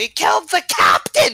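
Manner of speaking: very high-pitched outcry from a crowd. Voicing townspeople reacting to a killing: crowd yelling out. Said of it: "the people yell out".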